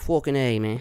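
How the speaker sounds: put-on offhand, tossed-off Irish accent. Imitating someone coming over to America: Conor McGregor impression. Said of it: "Conor McGregor comes over here and he's like".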